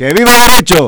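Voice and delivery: forceful yelled cheer. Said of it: "un grito con más fuerza".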